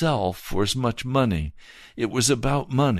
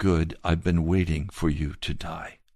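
quiet put-on divine voice, lower pitch; 7 semitones lower than usual. Retelling the Lord's answer after an angry outburst: quiet voice of the Lord. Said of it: "And very quietly, he answered audibly".

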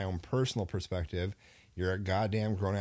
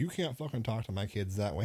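indignant, angry, pissed-off outburst; 2 semitones higher than usual. Retelling relatives' reaction at a family function: imitating angry relatives. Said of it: "everybody's getting all pissed off at me".

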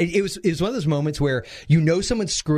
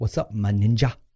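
muttered under the breath, lower pitch; 7 semitones lower than usual. Retelling what she'd say passing in the hall: imitating a line said under breath. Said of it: "under breath, she'd go".

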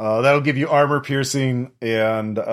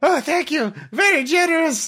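badly faked synthetic voice, very high. Voicing the spared tech creature's reply in a badly synthesized voice. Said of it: "He says in a badly synthesized voice".

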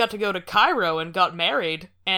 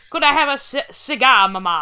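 put-on old-timey British, much higher, louder; 5 semitones higher, 6 dB louder than usual. Acting out a 1935 infant asking for things: Churchill impression. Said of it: "my Churchill impression".

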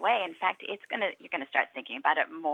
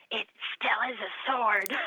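mock whisper, pitched higher than normal speech; 5 semitones higher than usual. Recalling a kid's remark while observing a classroom, retelling a whisper. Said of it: "he said in a whisper".

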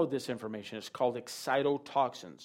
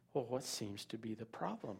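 very quiet, unruffled, calm voice; 3 semitones lower, 12 dB quieter than usual. Recounting what you asked her while the child acted up, retelling own calm reply. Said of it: "I said to her very calmly".

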